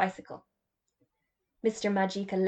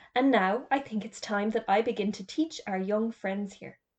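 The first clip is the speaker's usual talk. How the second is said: plain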